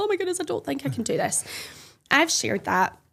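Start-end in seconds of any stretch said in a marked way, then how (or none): 0.0-1.4 high, weepy, tearful crying voice. Retelling a phone video recorded after a failed run: imitating her own crying. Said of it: "I'm just crying on the phone like".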